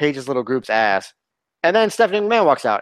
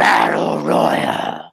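slow, swooping put-on older-man voice. Retelling an announcement of a women's battle royal: imitating a deep voice like her dad. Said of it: "she does, like, a deep voice, like her fucking dad".

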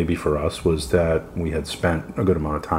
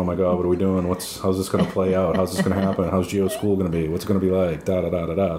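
usual speaking voice

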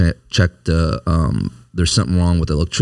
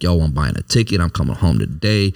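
usual speaking voice

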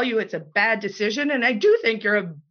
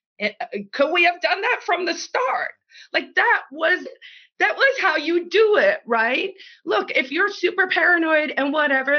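high, rising, sudden put-on yelled outburst; 7 semitones higher than usual. Retelling reacting to a plane announcement: imitating own past yell. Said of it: "I just yelled".

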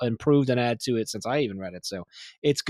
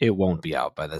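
very low, deep storybook narrator voice; 7 semitones lower than usual. Teasing about when a book will be out, in a narrator voice. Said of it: "I was going to do like the narrator voice of".

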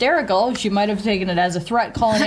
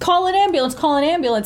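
high-pitched scream, said twice over; 7 semitones higher than usual. Retelling an injury, speaker re-enacts their own past screaming; retelling a scream. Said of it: "And I'm screaming".

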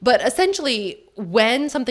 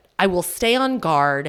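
ordinary talk, nothing marked

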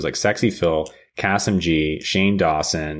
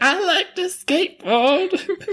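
mock very high, tearful blubbering voice. Retelling a scene to a friend, imitating Brian crying. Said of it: "Starts crying".

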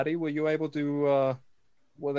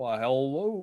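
put-on Kentucky-accented voice. Greeting arriving visitors in character, in a Kentucky accent.

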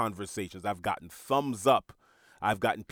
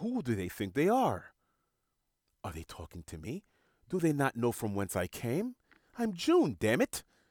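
animated celebrity-style voice with widely swooping pitch; 2 semitones higher than usual. Voicing own ego as an offended figure: Tim Gunn voice. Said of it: "He sounds sorta like Tim Gunn".

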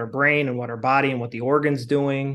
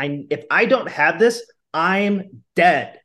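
mildly theatrical, raised voice, very slow and drawn out; 4 semitones higher, 3 dB louder than usual. Explaining how the brain treats a needed drink: a bit dramatic, raised voice. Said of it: "I'm being a little bit dramatic and I'm like raising my voice".

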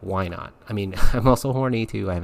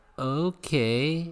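frightened, small, pitched-up scared voice; 6 semitones higher, 4 dB quieter than usual. Retelling his own reply when a woman whispered in his ear, retelling a scared okay. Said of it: "in that scared, frightened voice".

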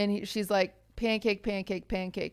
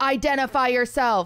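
mock, loud, megaphone-style loudspeaker voice; 4 semitones higher, 4 dB louder than usual. Retelling what a loudspeaker across the street said: imitating a megaphone announcement. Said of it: "sounds like a megaphone".

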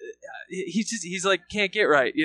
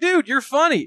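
mocking voice, high and loud. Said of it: "It's like".

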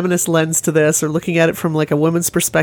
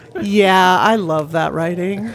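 slow, sarcastic, plainly insincere praising tone. Podcast host commenting on a passage in a Dresden book: sarcastic. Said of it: "she says sarcastically".

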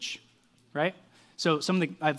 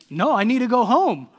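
put-on Serbian-accented speech; 8 semitones higher, 10 dB louder than usual. Acting out a Denver Nuggets player answering a reporter after winning the championship, imitating a Serbian accent. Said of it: "In his Serbian accent".

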